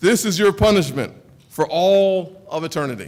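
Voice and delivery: booming, thunder-like voice from the heavens. Retelling a dream, speaker quotes what the heavenly voice said: thunderous voice from heaven. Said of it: "that voice from heaven said this".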